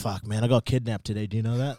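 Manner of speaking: imitated tired voice. Retelling the uncle's usual answer when greeted: imitating uncle Venny. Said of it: "every time you talk to this dude".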